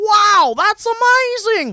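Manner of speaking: very high, loud exclamation. Retelling a travel show episode: Huell Howser voice. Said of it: "Huell-Hauser would be like".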